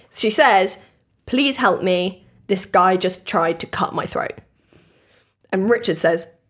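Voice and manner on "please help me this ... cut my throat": ordinary talk, nothing marked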